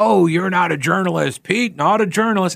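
sneering mockery.

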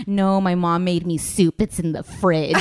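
plain

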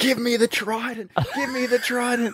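screeching, shrill, very high-pitched scream. Recalling an escape room nightmare, retelling screaming at a mate. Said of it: "me just screaming at my mate".

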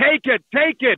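insistent, repeated, hard-pressing tone. Retelling a movie scene about a settlement offer: imitating Jim Carrey yelling. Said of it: "he starts yelling".

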